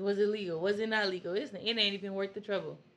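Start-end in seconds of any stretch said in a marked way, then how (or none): none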